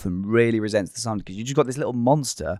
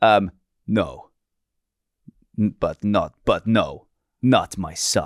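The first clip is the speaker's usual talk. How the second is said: put-on Bulgarian man's accent in a character voice; 4 semitones lower than usual. Improvising as a Bulgarian man with his family, in a Bulgarian accent. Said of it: "what accent was that".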